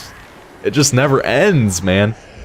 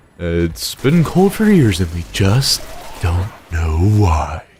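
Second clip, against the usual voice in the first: low, bad game-announcer-style narration; 4 semitones lower than usual. While playing a game, doing a Little Inferno announcer impression. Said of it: "Almost sound like that announcer from like Little Inferno".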